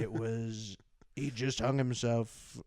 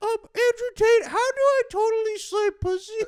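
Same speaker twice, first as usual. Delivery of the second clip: put-on very high, loud childish kid voice; 9 dB louder than usual. Acting out kids asking a question: imitating a kid asking. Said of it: "having kids be like".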